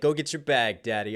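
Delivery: ordinary talk, nothing marked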